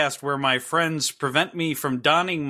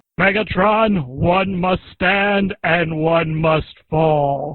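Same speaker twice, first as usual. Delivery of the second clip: uncanny, spot-on robot commander voice; 6 dB louder than usual. Doing the voice again when asked: uncanny Autobots commander voice. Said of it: "Do it again".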